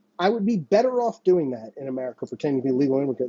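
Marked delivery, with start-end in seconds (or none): none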